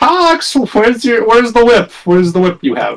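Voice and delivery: put-on very high, swooping, forced cheery voice. Voicing a character asking Tox for the whip: put-on happy, cheery voice. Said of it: "put on the happy, cheery voice".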